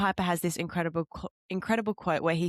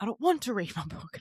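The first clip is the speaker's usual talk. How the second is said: put-on irritated, fed-up, angry retort; 2 semitones higher than usual. Retelling someone's reply when pushed to read a book: imitating someone angry. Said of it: "And he gets angry at me".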